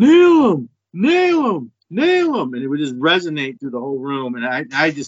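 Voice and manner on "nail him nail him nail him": booming yell, pitched way up, dragged very slowly. Retelling how dad yelled at the tv during games: imitating dad yelling at tv. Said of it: "he'd just yell out".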